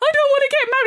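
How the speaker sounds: mock tearful, high-pitched, weepy sobbing. Retelling a scene where a woman cries at her wedding: imitating someone crying. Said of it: "She's crying like it's her real wedding".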